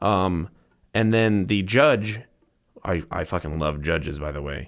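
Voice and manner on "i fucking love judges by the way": heavy, dripping sarcasm laid on thick. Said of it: "Sarcasm to the max".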